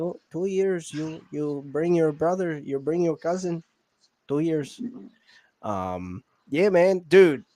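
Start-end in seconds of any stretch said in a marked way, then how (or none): 0.0-4.8 fake Spanish accent on English. In conversation, the speaker repeats a quoted line in a put-on spanish accent. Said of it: "I'll do the accent".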